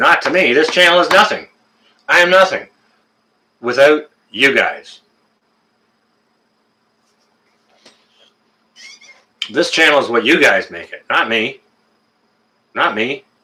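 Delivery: choked up and tearful, near crying. Streamer thanking viewers for what they make the channel, choked up and crying. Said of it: "now you got me crying".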